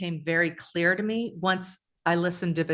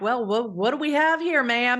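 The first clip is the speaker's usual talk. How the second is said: poorly done put-on Canadian accent; 6 semitones higher, 3 dB louder than usual. Retelling what a tow truck driver said on arrival: bad Canadian accent. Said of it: "I can't do a Canadian accent".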